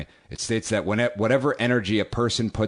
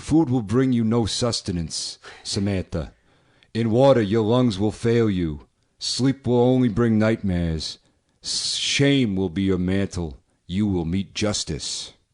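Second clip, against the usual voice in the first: put-on Brooklyn tough-guy voice. Reading a witches' hex aloud, doing it like Tony Danza. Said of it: "I'm just gonna do it like Tony Danza".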